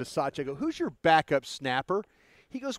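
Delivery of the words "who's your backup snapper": ordinary delivery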